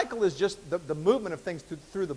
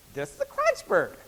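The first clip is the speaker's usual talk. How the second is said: very high-pitched put-on voice. Telling a joke, voicing the wife giving her husband a bird: high voice. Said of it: "I got to use the high voice there".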